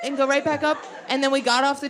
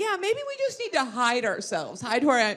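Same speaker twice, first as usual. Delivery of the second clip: plain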